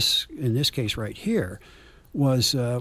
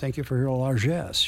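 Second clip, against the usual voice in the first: put-on sarcastic tone. Retelling what a man said to a lady who flipped him a nickel, sarcastic thank-you. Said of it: "it was very sarcastic when he said".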